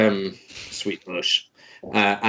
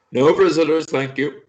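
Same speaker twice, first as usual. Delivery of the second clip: tiny, high, loud little voice; 7 semitones higher, 5 dB louder than usual. Voicing a little mouth that comes out of a pillar: little mouth in a pillar speaking. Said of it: "this little, like, mouth comes out and goes".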